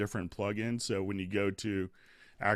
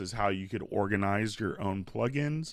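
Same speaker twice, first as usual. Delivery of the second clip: plain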